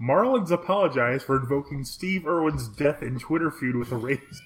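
laughter pushed down under the words. Reading a news headline aloud to the other speaker, holding back a laugh. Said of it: "I'm going to have to say this without laughing".

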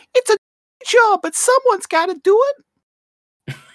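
very high-pitched, shrill, loud librarian voice. Describing a scene, quoting the librarian lady in a really high-pitched voice. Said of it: "in this really high pitched voice".

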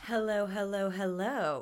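put-on laid-back, relaxed drawl. Greeting listeners at the start of an episode: Matthew McConaughey voice. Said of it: "I sound like Matthew McConaughey".

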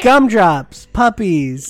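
put-on child voice. Acting out the other speaker as a child: imitating a child. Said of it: "you're sitting here going, like".

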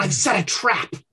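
completely crazed character voice. Voicing a figure over a dead body in an alley: crazed Emperor Norton voice. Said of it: "a crazed Emperor Norton".

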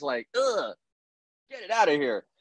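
high, disgusted, grossed-out brush-off.

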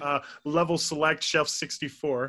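slowed right down.

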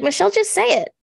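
high, loud, exasperated pleading tone. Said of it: "And it's like".

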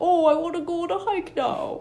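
very high, silly talking-dog voice. Retelling how the speaker's brother talked as their dog, in the dog's voice. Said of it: "that's my dog's voice".

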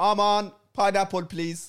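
very high-pitched, put-on Persian accent. Saying the pineapple line again to show it in persian, with a persian accent. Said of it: "That's in Persian accent for you as well".

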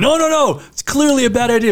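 play-acted scream, pitched very high, protesting. Acting out a reader who sees the main character do something bad: imitating screaming at a book. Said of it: "you're screaming at the book going".

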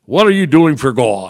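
put-on Pennsylvania regional accent. Recalling a woman who started talking to them, in her Pennsylvania accent. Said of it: "she had a Pennsylvania accent".

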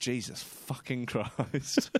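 muttering under breath. Recalling guests checking into the honeymoon suite, retelling a mutter under breath. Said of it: "mutter under my breath".

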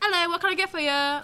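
full-on fake British accent. Speaker retells greeting customers at work, in a put-on british accent. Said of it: "I was full on British".

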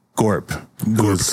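normal talking voice

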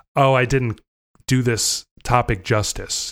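ordinary delivery

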